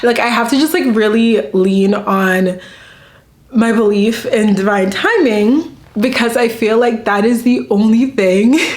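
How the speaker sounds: heartfelt, earnest, emotional, moved tone. Speaking to her audience and surprised at herself, getting emotional. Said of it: "I don't even know why I'm getting emotional talking about this".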